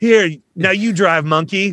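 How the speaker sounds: put-on easygoing, high stoner dude voice. Describing how a character should act, quoting the Grandma's Boy weed dealer voice. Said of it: "the weed dealer guy".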